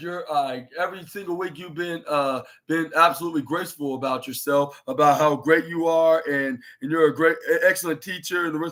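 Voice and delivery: ordinary talk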